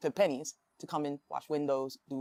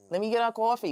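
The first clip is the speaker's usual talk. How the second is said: New York accent bordering on Yiddish; 7 semitones higher, 5 dB louder than usual. Explaining how New Yorkers speak English, then demonstrating: New York accent. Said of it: "we carry an almost Yiddish-like accent".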